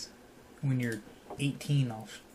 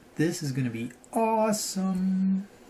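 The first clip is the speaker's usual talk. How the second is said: musical, singsongy, lilting voice; 6 semitones higher, 5 dB louder than usual. Building a treehouse in the game with another speaker: sing-songy voice. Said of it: "What are you singing about?".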